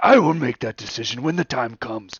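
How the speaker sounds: heated argumentative tone, loud and high-pitched. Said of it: "arguing with Vladimir".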